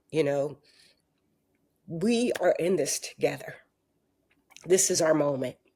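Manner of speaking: getting choked up. Answering the interviewer's remarks mid-thought, choking up. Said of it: "I'm like choking up about it".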